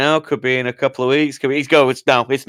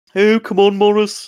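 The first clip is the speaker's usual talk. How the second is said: put-on Scouse Liverpool accent, high and slow; 8 semitones higher than usual. Quoting a film character to friends: put-on Liverpudlian accent. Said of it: "Every time I do a Liverpudlian".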